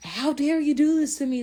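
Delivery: put-on, very high, shrill, loud hollering scream. Retelling overhearing a father yelling at his son on the phone, imitating a screaming dad. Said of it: "his dad is like screaming".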